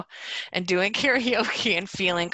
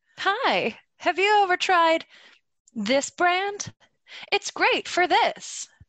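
salesy, over-the-top commercial voice, pitched way up; 12 semitones higher than usual. Showing how she will read a brand ad on the show, in an exaggerated ad voice. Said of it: "I'm going to turn that ad voice up so hard. I'm going to be like".

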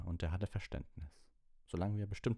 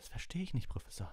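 quavering, shaky, trembling, unsteady voice; 5 semitones higher, 4 dB quieter than usual. Speaking up to her professor, she answers in a shaky voice. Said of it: "mit zittriger Stimme".

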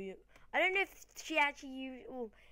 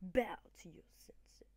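hushed, breathy, whispered cool ninja-style put-on voice; 3 semitones lower, 4 dB quieter than usual. Voicing the ninja opponent in a final Pokemon battle, in a cool ninja voice. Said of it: "Cool voice because he's got shades on".

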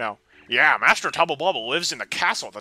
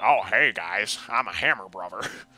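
deep, heavy rural Southern accent; 6 semitones lower than usual. Speaker voicing how they always pictured Hammer Bros sounding, Southern hick Hammer Brother voice. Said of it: "that Southern hick voice".

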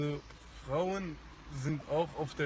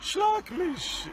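ecstatic, euphoric, very high-pitched loud cry; 7 dB louder than usual. Quoting a hypothetical request from a woman, in a mock-euphoric tone. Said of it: "in einem sehr euphorischen Ton".

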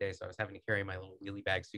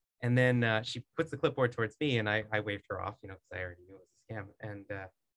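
ordinary talk

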